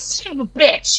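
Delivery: very slow mutter from the side of the mouth. Voicing a character cursing again: muttering from the side of the mouth. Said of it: "hear her from the side of the mouth going".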